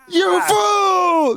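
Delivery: very high, shrill screech at full volume, fool drawn out. Retelling a character yelling at the top of his lungs: imitating Ivankov yelling. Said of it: "That's literally what Ivankov said".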